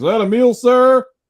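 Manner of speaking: very high, shrill, loud, barked drill-sergeant scream. Retelling a Subway worker like a drill sergeant: imitating a screaming drill sergeant. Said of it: "She'd just scream it across the place".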